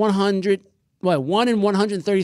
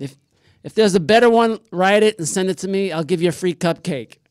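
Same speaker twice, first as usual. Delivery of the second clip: ordinary delivery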